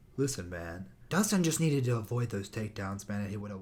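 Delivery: very low, soft, no-energy, listless delivery. Imitating a commentator called charmless: low-energy Anthony Smith impression. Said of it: "He'd be like".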